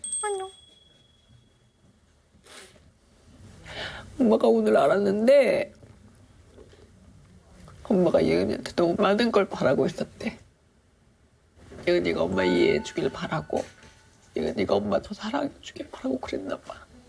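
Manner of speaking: tearful voice, crying while talking. Apologizing to her child after advice about parenting: crying while talking. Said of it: "엄마 울지 마".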